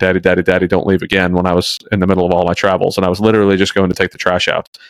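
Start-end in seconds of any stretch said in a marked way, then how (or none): 0.0-1.3 mock crying, tearful child's voice. Father retells his child running up to him, imitating a crying child. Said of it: "he came running up to me crying".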